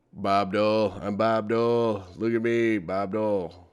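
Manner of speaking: deep, very slow, dragged-out delivery. Imitating Bob Dole as played on SNL: Norm Macdonald as Bob Dole. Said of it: "Norm Macdonald playing Bob Dole on S N L".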